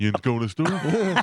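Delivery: put-on high-pitched Pittsburgh accent. Imitating Robert De Niro trying a Pittsburgh accent: Robert De Niro doing Pittsburgh. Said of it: "If I said to Robert De Niro".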